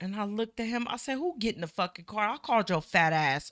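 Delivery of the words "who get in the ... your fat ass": raging, furious outburst. Retelling talking back to police who ordered them into the car: retelling an angry outburst. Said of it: "I'm so mad, right?".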